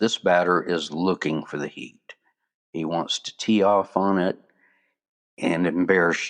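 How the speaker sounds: usual speaking voice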